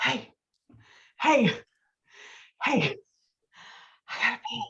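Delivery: heavy-breathed, breathy, tipsy voice with urgency. Retelling a drunk man waking in the Jeep: imitating breathy drunk voice. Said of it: "he gets really breathy".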